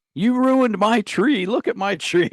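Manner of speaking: put-on shrill, very high, furious old man's shout. Retelling how an old man came out and yelled at the group, imitating an angry yell. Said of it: "he's yelling at us".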